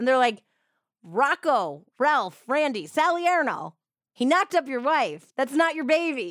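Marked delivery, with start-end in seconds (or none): 1.0-6.3 put-on shouted taunting, higher pitch. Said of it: "a news reporter shouting at him".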